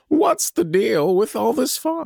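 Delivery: very high, slow, pitched-way-up delivery. Joking about fog, then doing a Jerry Seinfeld voice. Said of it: "I sound like Jerry Seinfeld".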